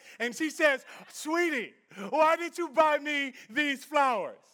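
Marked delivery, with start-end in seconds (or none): 1.1-4.3 put-on excited voice. Retelling a story of a wife surprised with roses: imitating an excited wife. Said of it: "so she's excited".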